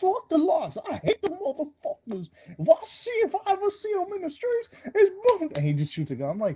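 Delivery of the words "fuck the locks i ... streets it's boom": very high, swooping, drawn-out tough-guy bravado. Quoting a line from an album intro: Tracy Morgan impression. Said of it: "Tracy Morgan out there cra-, cracking down".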